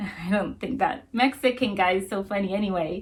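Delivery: plain reading voice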